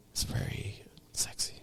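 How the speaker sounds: hushed, very quiet, breathy whisper. Chatting with a co-host on the show, both whispering. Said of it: "Why are we whispering like".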